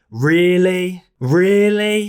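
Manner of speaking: acted skeptical, heavy stress on really. Imitating how people respond to someone's plans, mock-skeptical, stressing 'really'. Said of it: "people really emphasize the word really".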